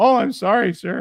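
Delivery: put-on very high-pitched, loud, pimply teenage voice. Retelling a scene from The Simpsons: voice of the pimply Simpsons teen. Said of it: "the pimply kid from The Simpsons ... he's like".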